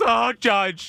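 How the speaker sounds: put-on gleeful excitement. Retelling how a co-host reacted to a homer: imitating someone's gleeful excitement. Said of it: "what me and Ike saw was".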